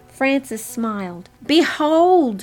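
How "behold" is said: loud, high-pitched shouting. As a door opens at the back of the sanctuary, Frances shouts. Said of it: "she shouted".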